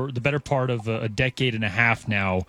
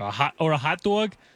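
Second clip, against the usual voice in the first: mock New York accent, higher pitch; 4 semitones higher than usual. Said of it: "Is that a New York accent?".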